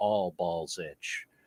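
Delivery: play-acted very low, dead-flat deadpan. Retelling a film scene where the brother answers her: imitating a deadpan line. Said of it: "he just looks at her very deadpan and says".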